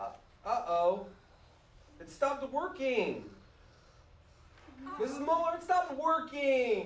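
whiny voice. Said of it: "I'm whining".

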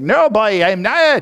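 put-on very drawn-out Newfoundland accent. Acting out Peter denying he follows Jesus: put-on Newfie accent. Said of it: "it had a bit of Newfie in it".

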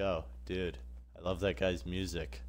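usual speaking voice

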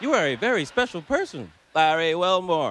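canned, robotic, automated computer voice. Retelling a call from an automated computer: imitating a computer voice. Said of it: "It's like".

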